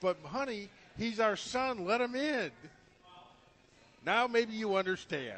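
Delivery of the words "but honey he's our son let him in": mocking, teasing voice, high and drawn out. Talking to John, acting out a plea made to his father, mocking imitation. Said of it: "Now you're mocking me".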